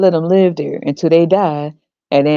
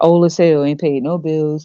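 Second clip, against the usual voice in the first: normal talking voice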